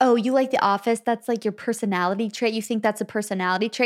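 ordinary delivery

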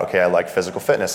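ordinary delivery

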